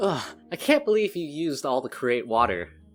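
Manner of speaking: high-pitched squabbling, bickering complaint. Voicing a roommate heard arguing through the door: bickering. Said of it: "And the bickering continues".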